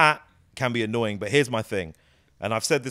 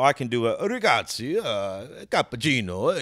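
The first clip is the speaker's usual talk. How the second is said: put-on Italian accent, spoken much slower. Speaker discussing accents shows what they can do, mock italian accent. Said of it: "I can do that".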